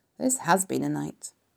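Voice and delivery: ordinary delivery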